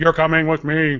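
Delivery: robotic, clipped, mechanical voice.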